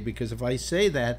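ordinary talk

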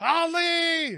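very high-pitched, loud, maniacal screaming.

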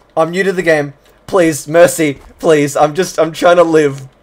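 desperate, pleading begging tone. Cornered in a game, a new player begs an opponent, pleading for mercy. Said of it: "pulling on my heartstrings right now".

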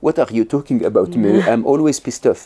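put-on heavy, thickly laid-on French accent. Retelling a podcast guest's reply to the host's question: Matthieu's French accent. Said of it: "in his very French accent and goes like".

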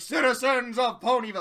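booming voice, grand like royalty. Recapping an episode, voicing Princess Luna arriving in Ponyville, in Princess Luna's Royal Canterlot voice. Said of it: "It's the Royal Canterlot voice, where she's just really fucking loud".

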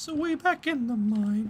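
high, slow, bad cartoon mouse impression. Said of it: "That was a terrible Mickey Mouse impression".

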